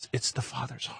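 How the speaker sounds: imitated whisper. Recounting what a man whispered to them, retelling a whisper. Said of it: "He's just whispering".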